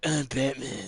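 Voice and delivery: very loud, booming caped-hero voice. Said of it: "Fucking deep voice".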